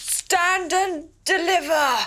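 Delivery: put-on highwayman voice, very loud, high-pitched bellowed shout. Retelling a story, repeating what she kept shouting, retelling a loud shout. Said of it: "Very loudly".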